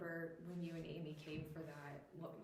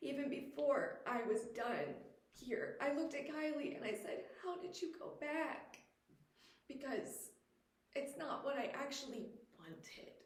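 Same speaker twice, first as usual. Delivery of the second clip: emotional, higher-pitched voice, welling with feeling; 8 semitones higher than usual. Sharing a personal story in conversation: getting emotional. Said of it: "sorry, I'm getting emotional".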